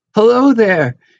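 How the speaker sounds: very high, trembling, shaky call. Narrator reading a character calling out to an approaching man, in a shaky voice. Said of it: "he called in a shaky voice".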